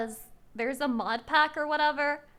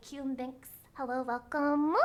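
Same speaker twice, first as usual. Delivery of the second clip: put-on motherly voice, slower; 5 dB quieter than usual. Streamer welcomes a chat member by name, in a mommy voice. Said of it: "I have to do mommy voice".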